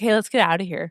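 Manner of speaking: normal talking voice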